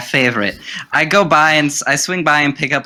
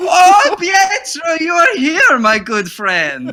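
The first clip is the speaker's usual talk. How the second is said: voice rising louder and louder; 4 dB louder than usual. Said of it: "raising his voice louder and louder".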